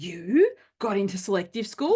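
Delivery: play-acted mean, ugly, horrible, nasty voice. Speaker retelling a boy's reply to a girl, in a horrible voice. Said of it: "like in this horrible voice".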